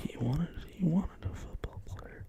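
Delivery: soft, barely voiced whisper. Talking about someone who wanted a football player, whispering. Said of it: "I don't know what you're whispering".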